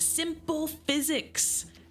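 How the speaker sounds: know-it-all nerdy voice. Retelling a sibling in-joke from a game, Skylanders nerd voice. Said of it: "stereotypical nerd voice".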